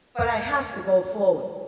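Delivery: ordinary talk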